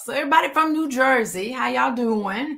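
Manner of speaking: attempted, put-on New Jersey accent. Speaker greeting listeners from New Jersey, in a put-on New Jersey accent. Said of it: "Try to talk with a New Jersey accent".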